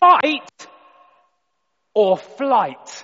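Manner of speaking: very loud, shrill, full-volume, top-of-the-lungs shout. Retelling how a police officer slammed a desk: imitating a police officer shouting. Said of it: "he shouts at the top of his voice".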